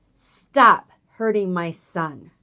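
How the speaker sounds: put-on firm, commanding voice, loud and slow. Telling how she stopped her fighting sons, recreating her authoritative mom voice. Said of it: "in my most authoritative mom voice".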